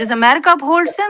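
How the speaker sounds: loud, high-pitched screaming and shouting. In a heated debate, talking over the other speaker, shouting. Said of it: "when you're done screaming".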